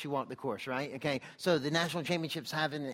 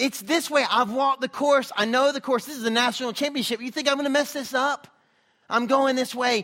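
put-on yell, higher and louder; 9 semitones higher, 11 dB louder than usual. Retelling a runner calling the pack back to the turn: imitating someone yelling. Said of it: "he starts yelling at people".

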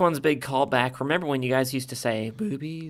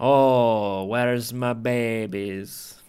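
put-on pirate voice with Scottish accent; 6 dB louder than usual. Speaker who just said they can't do scottish, doing a scottish pirate voice. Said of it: "This is like a Scottish pirate".

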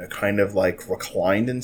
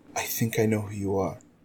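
whispering, quieter; 5 dB quieter than usual. Retelling how a man leaned in close and whispered: retelling a whisper. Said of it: "and whispers".

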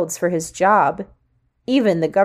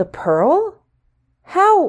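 very high-pitched, stunned, incredulous tone; 10 semitones higher than usual. The narrator's mother questions an investigator, incredulously. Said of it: "My mother asked incredulously".

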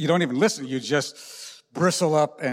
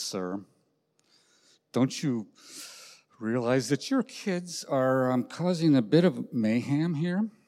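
put-on patient, loving, kindly tone, worked up. Retelling how a man addressed a stranger: retelling a loving, patient tone. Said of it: "works up his best love and patient tone of voice and says".

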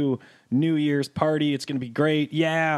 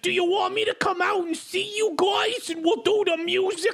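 put-on New York accent, pitched way up. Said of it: "bit of a New Yorker accent there".

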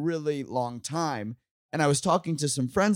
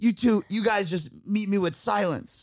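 higher-pitched yell; 7 semitones higher than usual. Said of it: "You screamed that at the table".

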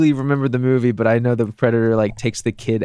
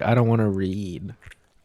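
slow, lazy, can't-be-bothered American drawl; 3 semitones lower, 4 dB quieter than usual. Imitating American viewers who avoid subtitles, mocking lazy Americans. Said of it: "be like".

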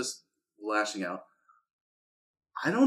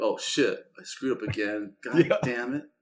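ordinary talk

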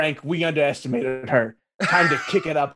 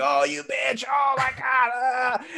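mock screaming man, much higher pitch; 9 semitones higher than usual. Retelling a fight scene, imitating a man screaming. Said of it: "And he's screaming".

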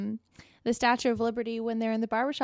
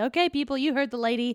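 normal talking voice

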